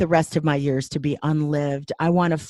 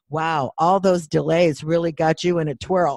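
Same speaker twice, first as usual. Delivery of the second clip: ordinary talk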